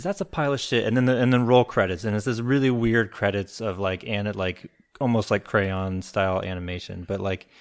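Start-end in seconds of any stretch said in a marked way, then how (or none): 0.0-0.8 put-on sweet, high, cute little girl voice. Retelling a movie scene, the speaker quotes a little girl: cute little girl voice. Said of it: "in her cute little girl voice".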